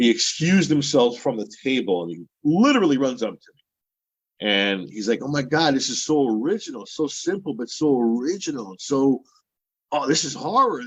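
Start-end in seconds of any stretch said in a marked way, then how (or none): 5.2-10.8 put-on thick, heavy Italian accent throughout. Retelling what a man said after running up to them, heavy italian accent. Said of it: "it's in a heavy Italian accent".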